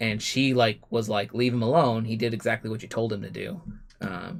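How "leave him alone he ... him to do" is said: ordinary talk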